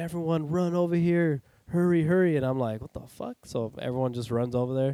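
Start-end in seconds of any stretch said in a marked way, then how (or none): 0.0-2.3 frantic, panicked screaming voice. Recounting what a woman at a desert camp did, retelling a scream. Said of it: "she's screaming".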